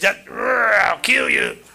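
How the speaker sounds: rough, creaky, grating demon voice in a man's voice. Speaker retells what the demon said when its voice changed, retelling a demon's roar. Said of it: "It just roared out".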